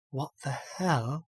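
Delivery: half-swallowed, soft mutter under the breath. Narrator voices the body you now inhabit reacting; Rowena muttering under breath. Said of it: "mutter under its breath".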